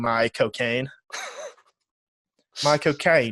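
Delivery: put-on drawn-out Cockney accent. Retelling a talk show clip, saying the name: Michael Caine Cockney accent. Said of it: "in his Cockney accent".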